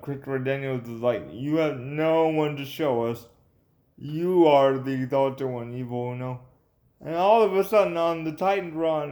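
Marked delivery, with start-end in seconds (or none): none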